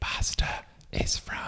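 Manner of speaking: very soft, close, hushed ASMR whisper. Retelling an ASMR video about making pasta: imitating an ASMR voice. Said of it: "talking about it with A S M R".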